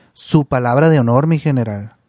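ordinary talk

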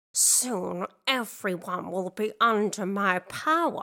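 slow muttering under the breath. Narrator reads the evil teacher's line, muttering. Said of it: "muttered Miss Deeds".

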